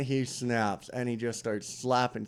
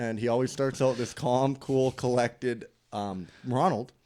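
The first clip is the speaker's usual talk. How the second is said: usual speaking voice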